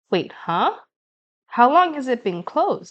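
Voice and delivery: ordinary delivery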